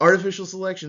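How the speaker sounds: rapid-fire, high, loud announcer read. Giving themselves a full minute, the speaker reads terms in really fast announcer voice. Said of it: "in my best, really fast reader announcer voice".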